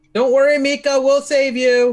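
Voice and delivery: high, drawn-out, in-character shout. Calling out to Mika in character during the fight: in-character yell. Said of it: "I'm gonna yell".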